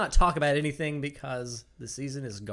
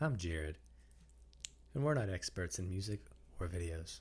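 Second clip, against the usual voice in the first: put-on gloom, very deep, very soft, hushed, depressed; 7 semitones lower, 11 dB quieter than usual. Introducing himself on a podcast, trying to match his co-host's voice: mimicking Travis, sounding depressed. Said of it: "You sound so depressed".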